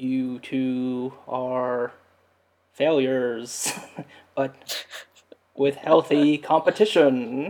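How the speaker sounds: every word drawn out very slowly. Retelling a TV character's line done as an impression of the Matrix agent. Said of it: "He's doing an impression of that guy".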